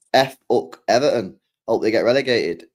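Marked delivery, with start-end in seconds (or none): none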